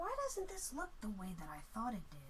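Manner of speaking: soft, puzzled whisper, as if to himself.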